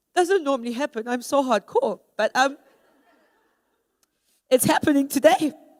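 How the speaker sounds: tearful voice, crying while speaking. Giving a talk and asking forgiveness for tears: crying while speaking. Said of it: "Forgive me if I cry".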